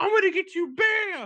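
very high, frantic, unhinged freak-out. Retelling how a man threatened a laughing kid, imitating someone freaking out. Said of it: "He's like freaking out on this kid".

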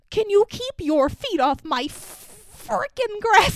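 mock irritated, drawn-out voice. Retelling how Stanley later gets irritated about his grass: imitating Stanley irritated. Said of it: "a little irritated".

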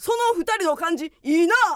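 put-on sudden, startling, loud, high shout. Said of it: "めっちゃ大きい声で急に言われた".

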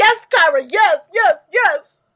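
mock very loud, drawn-out, weepy, triumphant cheering. Retelling the gif where Alasia pumps her fist while crying: imitating someone crying. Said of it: "pumping it while she's crying".

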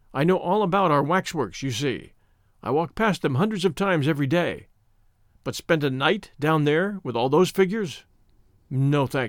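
ordinary delivery

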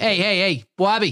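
put-on Boston accent. Saying the name after being asked for the Boston accent: Boston accent. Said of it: "do the Boston accent".

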